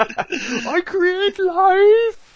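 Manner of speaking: very high, shrill screaming outburst, acted out. Recall a memorable performance in Jupiter Ascending with a screaming Eddie Redmayne impression. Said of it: "talks like this and starts screaming".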